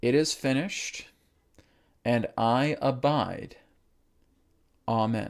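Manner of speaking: very slow, deliberate, drawn out word by word. Closing the process, saying the closing statement again very slowly. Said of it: "I'll say it very slowly".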